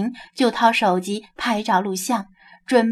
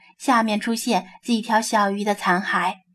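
usual speaking voice

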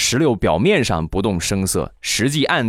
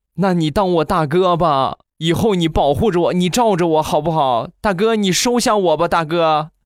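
high, groveling, fawning, flattering voice; 8 semitones higher than usual. Telling a story, acting out a young man begging to be protected: imitating a fawning plea. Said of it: "一脸谄媚的说".

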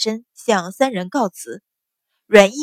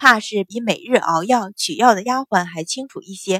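plain reading voice

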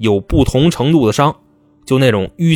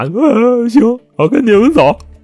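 mock weepy, tearful crying voice, pitched very high; 11 semitones higher, 3 dB louder than usual. Retelling a suspect's reply to the police, imitating a crying voice. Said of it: "就带着哭腔啊".

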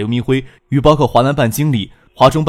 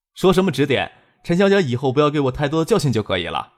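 usual speaking voice

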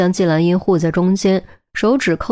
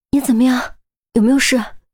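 high, quavering, trembling, shaken, worried voice; 5 semitones higher than usual. A narrator voices a man helping up a hurt companion: trembling voice. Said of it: "颤声问".

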